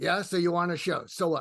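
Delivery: imitated Brooklyn accent. Retelling what he replied about being on a show, in a brooklyn accent. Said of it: "in his Brooklyn accent".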